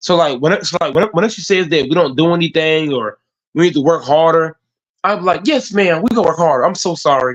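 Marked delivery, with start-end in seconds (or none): 5.4-7.4 put-on sarcastic, mock-sincere tone. Retelling answering a boss who says to work harder: imitating a fake sarcastic apology. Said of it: "deep down, they being sarcastic".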